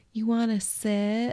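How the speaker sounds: put-on high, slow baby talk.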